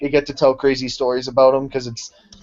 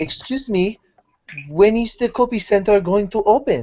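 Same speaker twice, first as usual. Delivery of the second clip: clumsy put-on Japanese accent, high and slow; 7 semitones higher than usual. Retelling what Japanese businessmen said this morning, in a horrible Japanese accent attempt. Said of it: "That's my horrible attempt at their accent".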